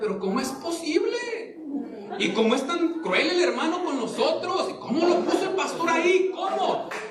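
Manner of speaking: shocked, incredulous, high voice.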